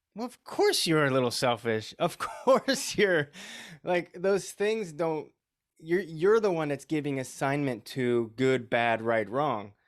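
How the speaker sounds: amused, high, laughing tone.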